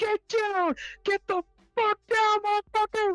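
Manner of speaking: put-on screaming. Retelling how a group barreled into an elevator at a man: retelling a scream. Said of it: "they just start screaming".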